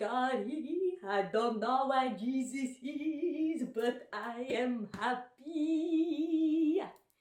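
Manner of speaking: put-on Haitian accent. Comedian recalls performing their first stand-up joke on stage: Haitian accent. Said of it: "I would like be so good at doing the accent".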